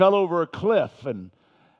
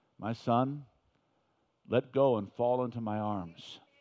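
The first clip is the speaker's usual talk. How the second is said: very quiet, still, small voice, low and soft; 6 semitones lower, 9 dB quieter than usual. Telling a story, the speaker voices what a praying man hears: still small voice. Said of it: "this still small voice that says".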